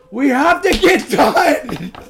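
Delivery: voice breaking mid-line, high and loud. Hurrying the others along, voice cracking. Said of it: "Your voice just cracked there".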